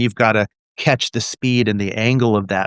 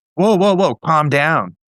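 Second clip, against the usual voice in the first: agitated, wound-up soothing voice, pitched up, drawn out; 7 semitones higher, 3 dB louder than usual. Showing the wrong way to calm someone: ramped-up demo of calm down. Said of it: "you can't just go".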